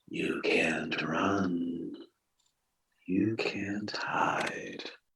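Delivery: whispering. A game narrator voices a decrepit figure as the players get closer: whisper. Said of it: "they whisper to you like".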